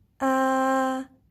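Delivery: a held on a level pitch. Teaching tones with the letter a: level tone on a. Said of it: "imagine your voice is going in a straight line".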